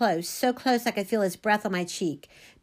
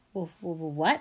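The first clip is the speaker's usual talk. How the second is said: stammering, stuttering, lower pitch; 5 semitones lower than usual. Called a liar by a student who took the seat across, the narrator stammers. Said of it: "I stammered".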